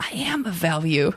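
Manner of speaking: mock under-the-breath muttering. Speaker retelling a fellow player's remark during a game, a mutter under breath. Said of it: "and just under his breath".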